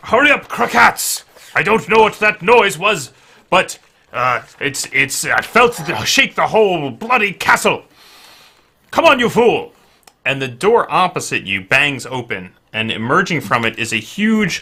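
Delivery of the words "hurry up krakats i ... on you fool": very high, shrill, impatient yelling. Narrating a man on the stairs calling back to a companion, shouting. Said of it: "and he shouts".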